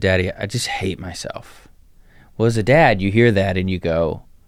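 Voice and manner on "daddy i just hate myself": put-on tearful crying voice, quieter. Retelling a daughter's words in a hard talk: imitating someone crying. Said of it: "and she was crying".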